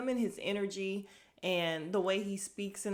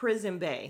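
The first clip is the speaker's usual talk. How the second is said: ordinary talk, nothing marked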